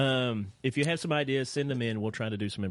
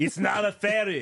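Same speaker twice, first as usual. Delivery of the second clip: loud, slow, high-pitched Austrian accent; 10 semitones higher, 5 dB louder than usual. Talking to the others as though everyone were Arnold Schwarzenegger: Arnold Schwarzenegger voice. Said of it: "talk to each other as though we are Arnold Schwarzenegger".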